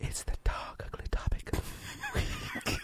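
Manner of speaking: whispering. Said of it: "it's always you whispering".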